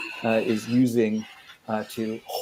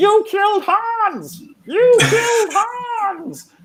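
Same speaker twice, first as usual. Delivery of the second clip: put-on parrot voice, much higher, louder; 6 dB louder than usual. Game master voicing a parrot pecking at a player's character: parrot voice. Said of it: "there's a big parrot that is pecking at you".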